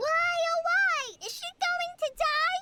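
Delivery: mock, high-pitched yelling without letup. Explaining why the master scolded her the whole way, imitating her own yelling. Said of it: "Paimon wouldn't stop yelling".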